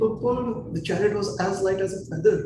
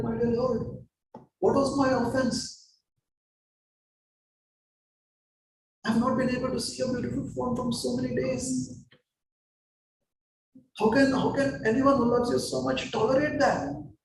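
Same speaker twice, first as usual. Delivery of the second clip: put-on weeping, sobbing, tearful crying; 5 semitones higher than usual. Retelling what a man said to the lord, imitating someone crying. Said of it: "He's simply crying".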